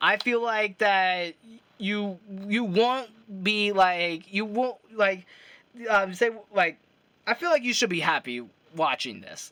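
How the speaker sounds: stuttering, tripping over words, halting restarts. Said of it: "I know I'm stuttering a lot".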